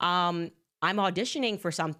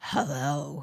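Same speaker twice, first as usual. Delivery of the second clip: full-on low growling voice; 4 semitones lower than usual. Retelling how the caller first answered the phone: growling Harvey Weinstein voice. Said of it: "That was actually really good what I did there".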